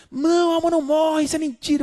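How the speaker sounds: wild, frenzied, frantic, high-pitched shout. Retelling how a man jumped up in the auditorium, imitating his frantic shout. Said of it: "gritando, alucinado".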